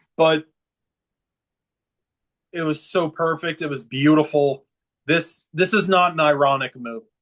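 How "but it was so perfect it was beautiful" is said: emotional, touched voice. Recalling a moment that was perfect, getting emotional thinking about it now. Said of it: "I'm getting kind of emotional thinking about it now".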